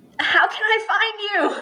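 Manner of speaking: very high, high-pitched called-out shout. Calling out in character after a fleeing runner: yelling out. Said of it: "I'm also gonna yell out at him".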